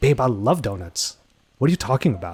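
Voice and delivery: mildly combative, slightly aggressive tone. Demonstrating to a partner how a phrase can come off a little aggressive. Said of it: "it actually comes off a little more aggressive".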